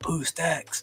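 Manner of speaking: whispered. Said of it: "I'll whisper it in your ear".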